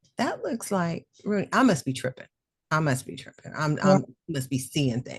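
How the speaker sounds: ordinary talk, nothing marked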